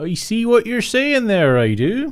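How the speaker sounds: put-on very strong Somerset accent, very high and swooping. Repeating own earlier line: imitating own strong Somerset accent. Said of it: "very strong Somerset accent then".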